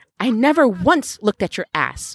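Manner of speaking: huffy, pushed out with a huff. A woman denies the other woman's teasing accusation: huffing. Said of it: "Waverly huffed".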